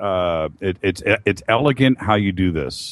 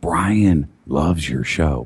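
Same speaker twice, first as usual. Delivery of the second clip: mock whisper, lower in pitch; 4 semitones lower than usual. Recounting a guy introducing his friend brian to the speaker, retelling a whisper. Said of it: "why are you whispering?".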